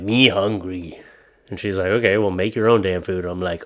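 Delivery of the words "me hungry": put-on caveman voice and talk. Showing how he talks to his wife, in caveman talk. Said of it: "Sometimes I speak like a caveman".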